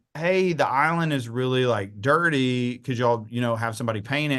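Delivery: ordinary talk, nothing marked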